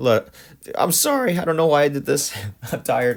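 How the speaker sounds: voice breaking. Working through a probability problem, apologizing to listeners while tired, voice cracking. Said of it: "My voice cracked again".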